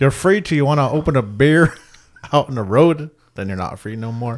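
American accent that drifts toward Indian.

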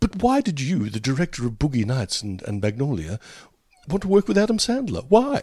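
put-on highbrow, poncy, snooty voice. Retelling a highbrow audience member's question to the director, in a poncy voice. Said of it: "I'm putting on a poncy voice for this guy".

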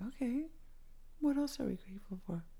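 gentle, high-pitched whisper.

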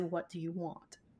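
very soft, barely voiced, hushed and very quiet. Retelling what the other speaker once asked an unseen presence: imitating someone speaking quietly. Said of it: "you said it very quietly".

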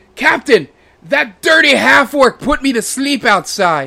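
very high, shrill, very loud yell. Voicing an orc who points at the half-orc: orc yelling down. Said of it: "He points at the half-orc and yells down".

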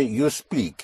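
ordinary delivery

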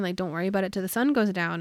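ordinary talk, nothing marked

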